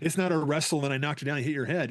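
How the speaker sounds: ordinary delivery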